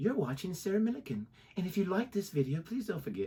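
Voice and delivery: soft, soothing voice. Opening a review video with a Sarah Millican impression, soothing. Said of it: "that was an awesome impression".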